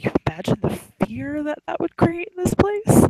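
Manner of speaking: very high pitch, a little too giddy. Voicing a character who leans in to suggest setting a fire: a little too giddy. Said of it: "her laugh is a little too, um, a little too giddy".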